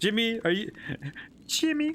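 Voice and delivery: weird, puppet-like character voice. Speaker attempts a game character's voice and lands on a Kermit-like voice. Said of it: "I sound like Kermit".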